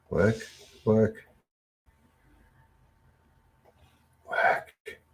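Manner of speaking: whispered, coaxing, hushed, under the breath. Urging a slow stream to work again: whispering. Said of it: "Sometimes you have to whisper".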